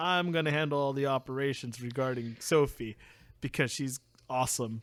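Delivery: plain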